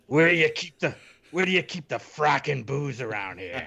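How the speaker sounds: put-on salty character voice. Podcast hosts discussing Battlestar Galactica, one putting on a salty voice. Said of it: "your salty voice".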